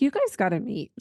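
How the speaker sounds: ordinary talk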